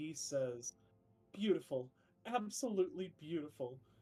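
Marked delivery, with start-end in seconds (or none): 1.3-3.8 loud, overjoyed, weeping cry of joy. Voicing a character greeting adventurers, crying tears of joy. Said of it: "he's crying tears of joy already".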